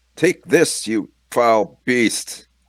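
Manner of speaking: high, loud, slow heroic knight roar.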